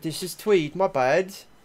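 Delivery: clumsy British accent. Chatting with a friend, the speaker slips into a bad British accent. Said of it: "your attempt at a British accent".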